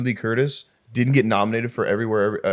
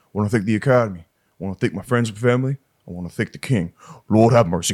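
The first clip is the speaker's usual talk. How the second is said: earnest, sincere, speech-style delivery. Imitating an actor thanking the Academy at the mic: Austin Butler impression. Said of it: "my impression of Austin Butler winning the Oscar".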